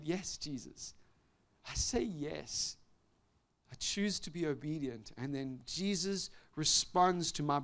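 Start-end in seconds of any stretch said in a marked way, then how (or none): 0.0-5.1 put-on tearful, broken-down, yielding voice. Retelling an answer to Jesus after breaking down: retelling own broken-down reply. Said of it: "I broke down".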